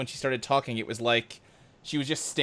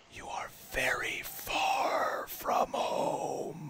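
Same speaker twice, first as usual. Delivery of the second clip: slow, deliberate, hushed whisper; 8 dB quieter than usual. Voicing a giant barnacle that speaks to the players: deafening whisper. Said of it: "it whispers, but the sound is deafening".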